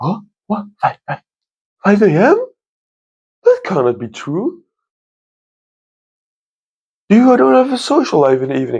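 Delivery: very high, wide-pitched, shocked disbelief.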